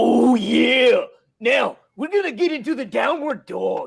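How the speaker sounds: rough, creaky, high, rasping wrestler voice. Imitating a wrestler leading a yoga workout: Macho Man voice. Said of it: "I'm gonna do my Macho Man".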